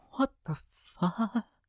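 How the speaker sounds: very high, hushed, frightened whimpering squeak. Reading a first-person story where the narrator's demand comes out whimpering. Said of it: "what came out was a whimper".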